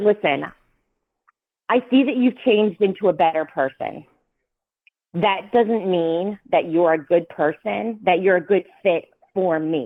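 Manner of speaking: plain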